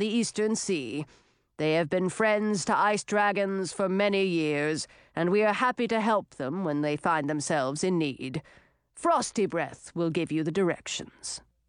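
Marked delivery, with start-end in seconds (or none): none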